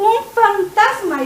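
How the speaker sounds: put-on frightened cry, acted-out scream. Retelling the disciples seeing a figure far off, acting out a scream. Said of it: "Y empiezan a gritar".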